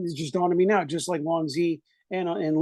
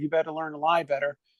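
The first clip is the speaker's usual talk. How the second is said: usual speaking voice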